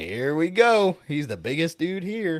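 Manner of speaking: loud swooping yell. Recounting a man cussing around kids, speaker acts out another man; imitating George yelling. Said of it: "George down there yelling at him like".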